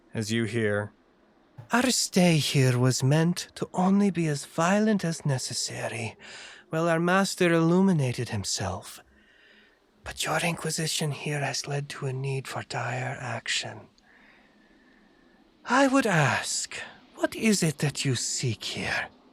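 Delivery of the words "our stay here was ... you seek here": reverberating, echoing voice, pitched higher. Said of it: "a voice echoes out from the chamber".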